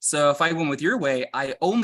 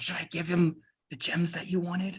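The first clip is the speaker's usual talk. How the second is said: hushed, half-whispered aside; 4 semitones higher, 5 dB quieter than usual. Half-whispering to a party member in character about the gems: half-whispering. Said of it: "I'm gonna whisper to Waldo".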